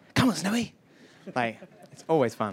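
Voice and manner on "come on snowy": put-on breathy voice pitched very high. Comparing the character voices they did, speaker does a breathy Tintin voice. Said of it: "doing a breathy Tintin voice".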